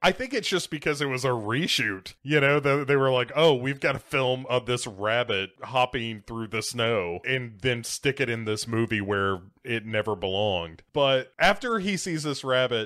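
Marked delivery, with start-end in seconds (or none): none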